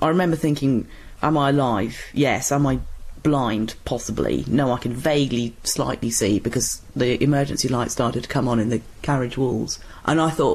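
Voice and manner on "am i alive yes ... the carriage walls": ordinary talk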